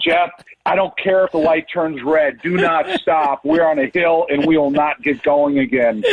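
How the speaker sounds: usual speaking voice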